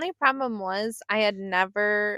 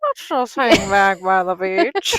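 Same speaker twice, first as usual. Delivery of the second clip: very slow, drawn-out drawl, a bit loud; 8 dB louder than usual. Imitating an actress suggesting they stay by the beach: Jennifer Aniston impression. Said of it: "how does her voice".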